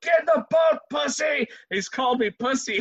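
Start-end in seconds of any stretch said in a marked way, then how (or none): 0.0-1.5 high-pitched, loud yelling. Retelling being dragged down rapids, father yelling from boat: imitating his father yelling. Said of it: "my old man's trying to grab me, and he's going".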